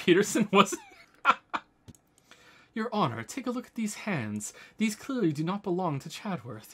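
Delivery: ordinary delivery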